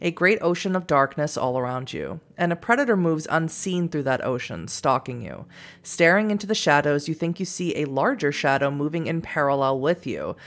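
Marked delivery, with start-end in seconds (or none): none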